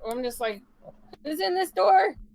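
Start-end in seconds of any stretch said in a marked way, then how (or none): 1.2-2.1 shouting, higher and louder. Yelling a question at a guard while pointing at the door: yelling at a guard. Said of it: "I just yell at him".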